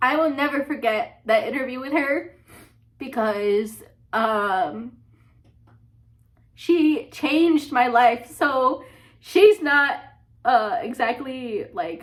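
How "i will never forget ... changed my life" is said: choking up, higher. Remembering an unforgettable interview, about to cry. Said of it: "oh, I'm gonna cry".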